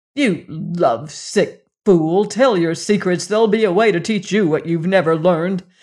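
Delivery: snarling, harsh snarled delivery. Tull turns on someone pleading for a prisoner, snarled. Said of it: "Tull snarled".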